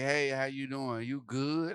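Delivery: put-on flight attendant voice with attitude. Retelling a stewardess walking up to him: imitating a stewardess with an attitude. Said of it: "Sanike walked up with an attitude".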